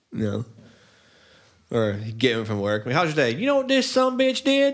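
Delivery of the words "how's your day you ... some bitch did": put-on wild, crazy, very high-pitched Southern accent. Speaker imitates their dad after picking him up from work, crazy southern accent. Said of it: "he has a crazy Southern accent".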